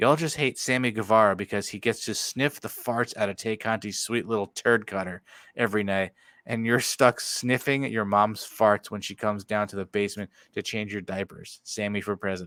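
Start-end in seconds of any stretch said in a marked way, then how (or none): none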